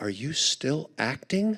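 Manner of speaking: very quiet whisper, close to the ear. Retelling a woman leaning down to whisper in his ear at a signing: whispering. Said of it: "she leans down and she whispers in my ear".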